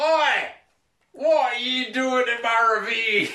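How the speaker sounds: very high, very slow, loud, drawn-out ogre shout. Narrating a scene, the speaker voices an ogre at a cave mouth: Shrek ogre voice. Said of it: "the ogre ... and says".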